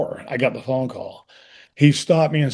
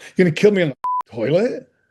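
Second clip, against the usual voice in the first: getting a little mad, mildly angry; 4 semitones higher than usual. Retelling hearing how the character dies: retelling getting a little mad. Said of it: "I get a little mad".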